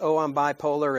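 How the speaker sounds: normal talking voice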